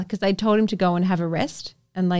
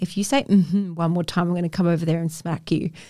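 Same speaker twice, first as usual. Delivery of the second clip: normal talking voice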